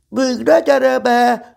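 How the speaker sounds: very high, raspy, flustered nervous yell. A piglet wrapping a present calls through the door to a visitor, shouting nervously. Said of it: "kiáltotta idegesen malacka".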